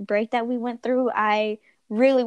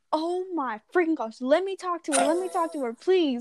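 high, frantic, begging freak-out; 6 semitones higher than usual. Retelling hearing her voice over someone's phone, imitating freaking out. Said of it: "I was like freaking out".

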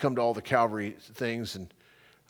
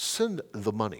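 put-on small-sounding Indian accent; 3 semitones lower than usual. Retelling a man's reply to the speaker's wish to help in india; put-on indian voice. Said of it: "in his little Indian voice".

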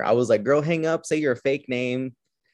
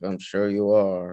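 imitated deadpan delivery in a deep, flat voice; 4 semitones lower than usual. Describing a film scene, the speaker quotes the secretary's reply, imitating a deep deadpan. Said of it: "in like a deep, just like deadpan".

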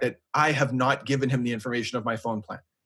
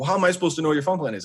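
usual speaking voice

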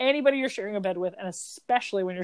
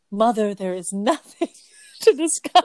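firm, raised, loud take-charge voice; 5 dB louder than usual. Quoting her line to her mother, imitating Kirsten taking charge. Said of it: "how she does sort of like take charge".

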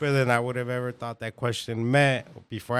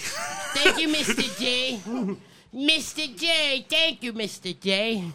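very high, swooping sing-song voice, stretched out; 13 semitones higher than usual. Acting out Harley Quinn answering the Joker: Harley Quinn voice. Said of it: "And she's like".

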